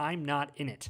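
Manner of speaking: sad, somber put-on voice. Describing how a show should have ended, the speaker quotes a line in a put-on sad Peter Dinklage voice. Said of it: "in his great Peter Dinklage sad voice".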